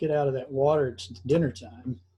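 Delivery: ordinary delivery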